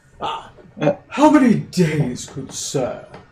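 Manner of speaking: put-on polite, slow, swooping British accent. Voicing an official checking passengers off a ship, in a british accent. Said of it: "Is a British accent".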